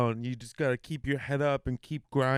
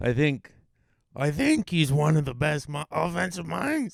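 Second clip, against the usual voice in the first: rasped out in a hoarse voice; 3 semitones higher than usual. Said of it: "I'm trying to sound hoarse and from Illinois".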